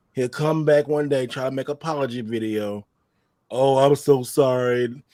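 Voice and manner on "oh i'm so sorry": very slow, drawn-out, fake tearful voice. Imagining a future apology video: mock crying apology. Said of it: "Crying with his big blue eyes".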